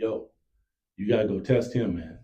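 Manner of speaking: loud, mock hollering. Retelling hollering at a player during a play: retelling a holler. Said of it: "I was hollering at him like".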